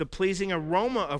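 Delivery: plain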